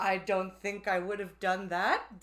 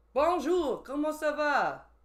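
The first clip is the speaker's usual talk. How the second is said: showy, high-pitched put-on French accent; 7 semitones higher, 3 dB louder than usual. Showing the others that he can do it too, in a french accent. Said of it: "It's a French accent".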